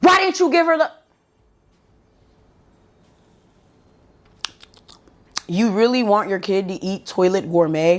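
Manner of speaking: mock sharp, snapping tone. Retelling a woman who yelled at her, mock snapping. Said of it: "she snapped at me".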